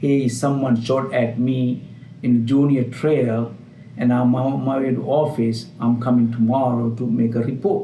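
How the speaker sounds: plain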